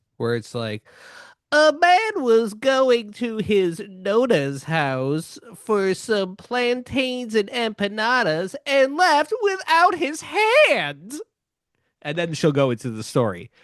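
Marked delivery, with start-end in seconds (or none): 1.5-11.2 high, swooping cartoon newsreader, slow, "hand" drawn out. Showing how Nikki Rudd reads the news: Nikki Rudd impression. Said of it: "a cartoon character reading you the news".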